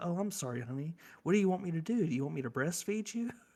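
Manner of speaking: utterly sincere, earnest, heartfelt, sympathetic concern. Retelling what a girlfriend said to a kid in the car: imitating someone as sincere as possible. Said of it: "as sincere as she possibly could".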